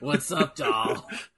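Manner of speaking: put-on haggard voice. Friends joke about someone with a haggard voice; speaker plays it up, put-on haggard voice. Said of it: "haggard as hell voice".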